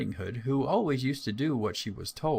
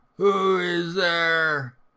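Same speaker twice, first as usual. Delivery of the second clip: loud, rough, gruff wolf voice; 6 semitones higher, 7 dB louder than usual. Reading a fairy tale aloud, the wolf in bed answering: gruff wolf voice. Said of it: "the gruff voice of the wolf".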